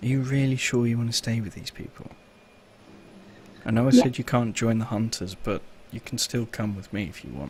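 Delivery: soft, quiet half-whispered voice. Voicing a character who turns to a friend and half-whispers. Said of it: "turns to Kimmy and whispers".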